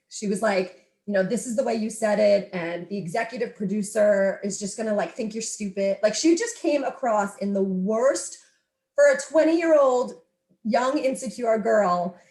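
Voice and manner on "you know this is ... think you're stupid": plain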